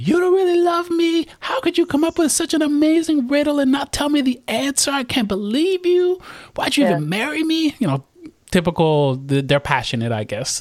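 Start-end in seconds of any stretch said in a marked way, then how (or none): 0.0-7.7 very high, shrill, loud screaming. Retelling a story where a wife screams at her husband over a riddle, imitating her screaming. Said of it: "She starts screaming at him".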